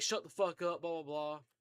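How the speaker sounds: ordinary talk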